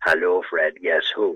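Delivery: smooth, lovely, low, velvety voice. Retelling someone greeting the speaker in his ear at Newlands, in a velvety voice. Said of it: "this lovely velvety voice saying".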